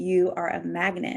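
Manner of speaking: put-on whisper. Quoting what a man leaned down to say at checkout, retelling a whisper in the ear. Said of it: "he leans down and he whispers in my ear".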